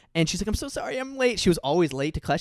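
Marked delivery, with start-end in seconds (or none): 0.5-1.4 crying, voice pushed very high, tearful. Retelling a girl who comes late into class: imitating someone crying. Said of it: "this girl comes into class and she's crying".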